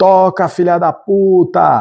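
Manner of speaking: rude, high, heckling yelled shout. A speaker telling a concert story, retelling a heckler's shout from the audience. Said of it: "algum cretino na plateia gritou assim".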